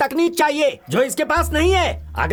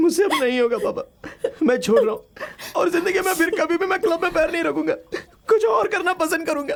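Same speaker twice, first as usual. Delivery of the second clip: tearful speech, crying while talking. A son speaks to his father, crying while talking. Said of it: "रोना बंद कर बेटा।".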